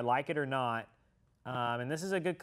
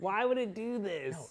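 fake sobbing through the words, high voice; 5 semitones higher than usual. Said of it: "Don't cry".

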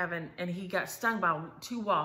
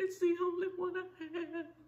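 put-on very high, drawn-out, sobbing wail like a child; 12 semitones higher than usual. Retelling her answer about the shirt, imitating her bawling. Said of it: "She's just bawling".

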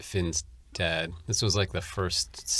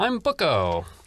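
shrill, very high, loud character voice; 10 semitones higher, 5 dB louder than usual. After saying they did the character's voice, giving a sample line, Bucco voice. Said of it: "That's my pen impression".

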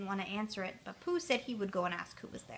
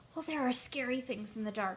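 ordinary delivery

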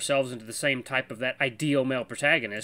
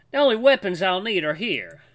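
put-on Southern US accent, higher and louder; 5 semitones higher, 5 dB louder than usual. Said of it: "I was doing, like, a southern accent for him".

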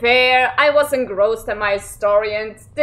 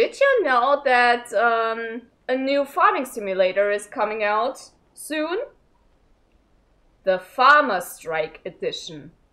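mock dead-straight, solemn, very serious tone; 3 dB quieter than usual. Retelling a colleague's joke about a farming simulator, imitating his very serious tone. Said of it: "in a very serious tone".

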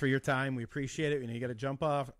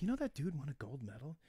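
hushed whisper, much quieter; 9 dB quieter than usual. Picturing a softball game, the speaker acts out somebody at the field: whispering. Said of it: "somebody just whispers".

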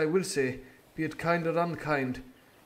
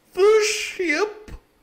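very loud, shrill, very high-pitched outcry; 10 dB louder than usual. Hearing where the ship lies, the doctor exclaims. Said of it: "Exclaimed the doctor".

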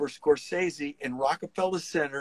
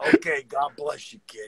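put-on Brooklyn accent, street-corner style. Retelling what a man said to him in a story, brooklyn accent. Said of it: "with the Brooklyn voice".

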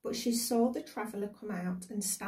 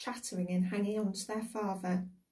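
usual speaking voice

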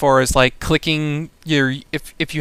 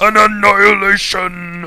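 put-on orc character voice; 5 semitones higher, 3 dB louder than usual. A game caster calls out a team annihilation, in an orc voice. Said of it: "I used my orc voice for that".

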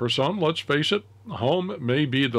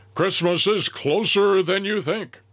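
put-on radio announcer voice, pitched up; 8 semitones higher, 4 dB louder than usual. Recalling a Midwest drugstore chain's Christmas advertising: radio announcer voice. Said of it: "I did that in my best radio announcer voice there".

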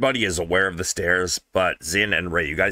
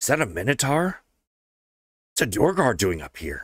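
whispering voices, higher-pitched; 4 semitones higher than usual. Narrator voicing unseen whisperers in the shadows of the streets, whispering. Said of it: "from the shadows you hear whispers".

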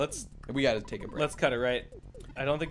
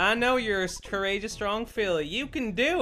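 acted cowgirl-style pony voice; 6 semitones higher than usual. Voicing the dad on a phone call in a game: Applejack voice. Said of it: "Why are you Applejack?".

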